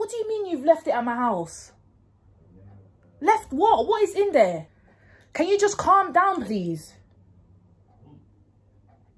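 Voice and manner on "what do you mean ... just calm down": high, loud, shouted fake argument. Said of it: "act like I'm having an argument".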